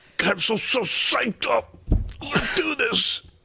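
all-serious, very slow, drawn out, pitched high. Retelling how someone got all serious in a speech: imitating someone getting all serious. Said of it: "he gets all serious".

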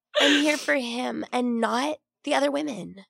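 put-on breathy whisper.

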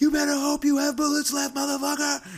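very loud, shrill, high-pitched scream. Recalling loading a rifle behind a stagecoach, retelling a yelled line. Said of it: "You're loading your rifle and yelling".

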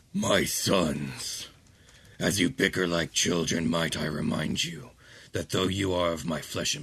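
deep, low, rumbling delivery. Voicing a father addressing his bickering sons, in a deep rumbling voice. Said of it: "a voice that is both deep and rumbling".

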